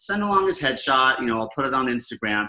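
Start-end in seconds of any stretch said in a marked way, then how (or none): none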